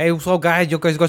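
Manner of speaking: put-on Boston accent. Imagining a player coming back from Boston with an accent, mock Boston accent. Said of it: "he has like an accent".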